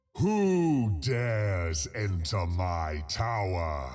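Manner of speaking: deep, bellowing, roaring dragon voice. Narrating a game battle, speaking as the dragon in a dragon voice. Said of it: "Good voice".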